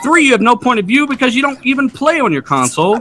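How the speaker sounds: mad, heated, high yell. Listing points against another speaker's argument in a debate: yelling. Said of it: "He's yelling".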